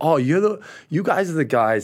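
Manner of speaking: clumsy, bad put-on American accent, high and drawn out. Quoting people around the world talking about the esports company, bad American accent. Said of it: "this is a bad American accent".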